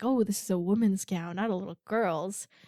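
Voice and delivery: put-on excited character voice. Retelling a bride trying on her gown: imitating excited character. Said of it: "so excited".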